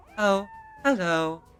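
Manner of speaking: soft, high voice set back in throat, pitch falling. Teaching a voice technique, the speaker demonstrates speaking like GLaDOS. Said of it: "imagine speaking like GLaDOS".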